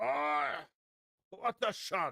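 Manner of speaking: high, super angry outburst. Listing people to find, the speaker imitates a super angry man. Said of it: "a Japanese guy who's super angry".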